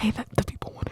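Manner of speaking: close, in-ear whisper. Playing a snake advisor in someone's ear: whispering into the ear. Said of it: "You're so A S M R today".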